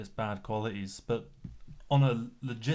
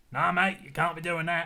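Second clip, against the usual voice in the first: loose, fake put-on Australian accent, pitched up; 7 semitones higher, 4 dB louder than usual. Imagining a council showing up to stop unpermitted filming, put-on Australian accent. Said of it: "I don't know what kind of Australian accent that was".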